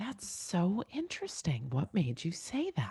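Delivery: smooth, soft, swooping, polished radio-host delivery. Advising parents how to answer a kid, imitating Cara: Cara's perfect radio voice. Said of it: "in like her perfect radio voice".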